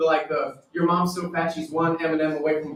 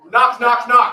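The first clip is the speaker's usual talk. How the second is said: loud call-out; 6 semitones higher, 7 dB louder than usual. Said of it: "say it like a Jehovah's Witness".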